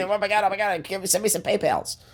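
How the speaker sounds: very high, worked-up raging outburst. Reluctantly agreeing to talk quickly, imitating Dean. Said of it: "I guess I can talk like Dean".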